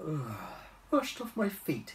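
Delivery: worn-out, drowsy tone. A lemur poked awake at work answers, weary. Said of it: "wearily rubbing his eyes".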